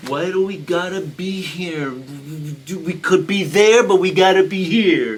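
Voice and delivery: mock, put-on, almost-whining voice. Taking a turn at a Sebastian impersonation for the group, imitating Sebastian's whine. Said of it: "you're almost whining".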